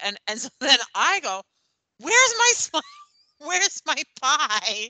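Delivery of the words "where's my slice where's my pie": mock panicked, loud, high cry of alarm. Retelling finding the pie gone, retelling a loud panicked shout. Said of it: "loudly and with some panic in my voice".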